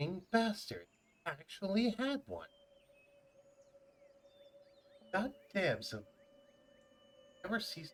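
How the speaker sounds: high, quiet mumble, muttered under the breath. Voicing a character whom a player overhears: mumbling under his breath. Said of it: "hear him mumble under his breath".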